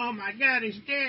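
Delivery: high, eager mock reporter calling out.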